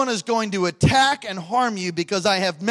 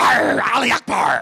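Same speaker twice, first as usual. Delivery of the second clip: mock raspy, creaky pirate shout in Arabic; 5 dB louder than usual. Telling a story of pirates screaming at a man, retelling pirates' yell. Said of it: "They're yelling Arabic at him".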